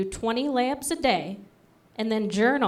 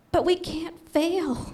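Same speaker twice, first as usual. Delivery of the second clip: very high, very slow, drawn-out character voice; 9 semitones higher than usual. Acting out a scene as her left boob answering her right boob: voicing her left boob. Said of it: "Here's left boob".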